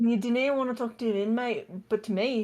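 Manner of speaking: attempted Scottish accent drifting into Australian. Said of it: "That sounded Australian".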